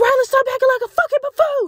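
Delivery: put-on shrill, very high scolding scream. Retelling a sister scolding a small child in a store: imitating sister screaming. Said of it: "my sister was screaming at her".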